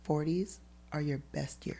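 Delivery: whispered softly. Retelling what mom said in her ear at the birthday: imitating mom's whisper. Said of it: "she whispers and she goes".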